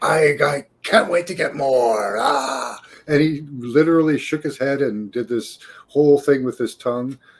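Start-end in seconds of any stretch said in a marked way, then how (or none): 0.0-2.8 slow, demonic, possessed-sounding voice. Retelling what a man getting off the elevator said, speaking like a demon. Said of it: "he spoke like a demon".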